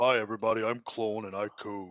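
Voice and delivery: voice deliberately dropped low, deep. Introducing a character to everybody, in a deliberately deepened voice. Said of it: "I deepen my voice like this as well".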